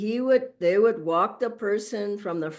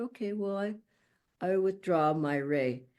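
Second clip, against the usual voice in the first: very quiet, soft, low-key voice; 7 dB quieter than usual. Retelling a reply to someone who was leaving, imitating a very quiet reply. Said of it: "Swamiji very quietly said".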